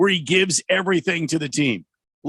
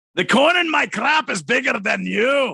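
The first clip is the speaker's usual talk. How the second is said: put-on Scottish accent, pitched up; 5 semitones higher than usual. Answering a request for the best Scottish accent: Fat Bastard Scottish accent. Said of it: "the fat bastard impersonation".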